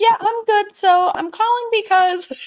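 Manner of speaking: very high, robotic customer-service voice. Retelling a daughter's phone call to her mother: Bree's robotic customer-service voice. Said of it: "she put her customer service voice on".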